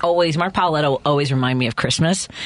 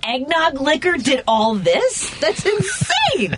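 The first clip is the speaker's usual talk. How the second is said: very high, slow, stunned disbelief. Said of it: "I'm like".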